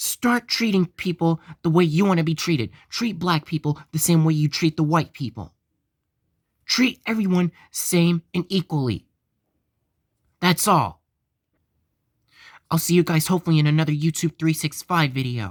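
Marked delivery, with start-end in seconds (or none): 0.0-11.0 slightly raised, heated, fired-up voice. Signing off a YouTube video to viewers, the speaker is raising voice a little. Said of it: "raising my voice a little bit".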